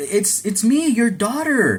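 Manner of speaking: stunned and drawn out, very high. Retelling a movie scene where a daughter comes home: imitating someone surprised. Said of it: "she's all surprised".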